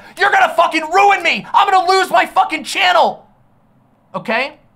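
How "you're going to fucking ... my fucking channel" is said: mock screaming, much higher and louder. Recounting a man screaming at people: retelling a scream. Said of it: "screaming at them".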